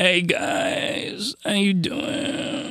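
put-on soft valley girl voice with creaky vocal fry. Talking about accents, the speaker demonstrates a Valley Girl voice with vocal fry. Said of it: "something like that with the vocal fry".

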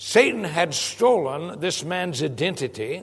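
ordinary talk

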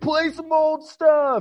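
very high, drawn-out heckling scream. Retelling how the crowd heckled the band: imitating crowd screaming. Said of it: "screaming, like".

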